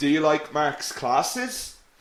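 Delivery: rising pitch at the end on classes. Showing learners how a question sounds: rising question intonation. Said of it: "Your intonation goes up at the end".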